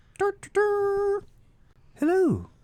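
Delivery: very high little trumpet fanfare, tiny bugle toots. Describing a mouse blowing a tiny bugle, the speaker imitates the bugle call. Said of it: "holds the bugle to his little mousy lips, and blows out".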